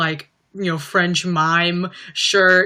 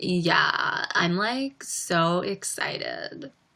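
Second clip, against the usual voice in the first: soft, breathy, unexcited vocal fry; 8 dB quieter than usual. After noticing your own voice got glottally, mimic how they say they're excited, Kardashian not-excited voice. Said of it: "Sound like a Kardashian".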